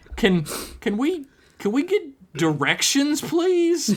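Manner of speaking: very high, swooping, stammered, pleading voice. Narrator reading a story, voicing a character asking for directions, pleading. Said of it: "Mickey pleaded".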